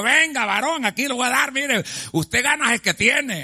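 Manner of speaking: put-on, high, mocking tone dripping with sarcasm. Retelling a man's reply in an argument, mock-sarcastic. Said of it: "todavía con sarcasmo".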